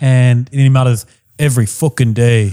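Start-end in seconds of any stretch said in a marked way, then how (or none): 1.4-2.5 put-on botched Russian accent drifting into Irish. Retelling a man checking a camera, the speaker mutters in an attempted Russian accent. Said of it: "in a Russian accent, not a weird Irish accent".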